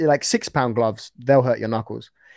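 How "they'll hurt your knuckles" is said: ordinary talk, nothing marked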